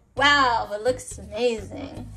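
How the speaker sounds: ordinary talk, nothing marked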